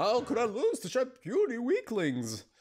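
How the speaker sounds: big hulking bear voice, high and swooping. Voicing a defeated large woman in a game: bear-like voice for a large woman. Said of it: "I have to sound like a bear".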